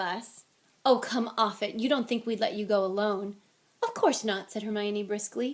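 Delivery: ordinary delivery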